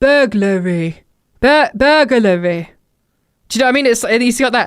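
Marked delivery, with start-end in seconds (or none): 0.0-2.7 put-on "burglary" unenunciated in a South English accent. Explaining how someone says a word, imitating Jake's South English accent. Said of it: "South English accent".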